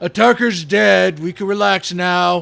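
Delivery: orc-like shouting in broken Common. Voicing a character yelling in broken Common to fool orcs: yelling in broken Common like an orc. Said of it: "I'll kinda yell out, uh, or not broken Orcish, broken Common. I'm trying to emulate the orc".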